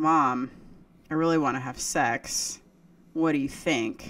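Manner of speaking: usual speaking voice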